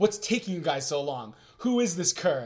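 ordinary talk

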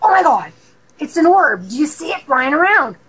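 eager, thrilled, excited, high, swooping outburst. Retelling waking up and seeing an orb: retelling own excited exclamation. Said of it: "I'm really excited".

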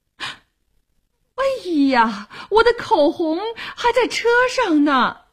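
abrupt, sudden, high-pitched cry out of nowhere. Rummaging in a handbag, a character suddenly exclaims. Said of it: "突然叫道".

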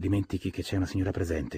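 plain

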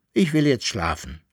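plain reading voice

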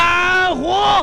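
frantic shouting at the top of the lungs.

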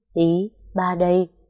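plain reading voice

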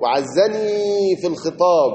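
ordinary talk, nothing marked

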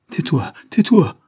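sudden, loud, blurted instinctive outcry. A woman interrupts Savary's confession, crying out instinctively. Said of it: "s'écria-t-elle instinctivement".

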